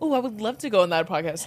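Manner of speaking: ordinary delivery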